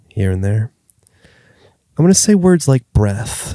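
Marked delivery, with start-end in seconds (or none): 2.0-3.6 mock breathy, slowed-down tone, higher. Joking that the talk turned into a therapy podcast: put-on breathy, slow voice. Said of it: "My tone is getting breathier".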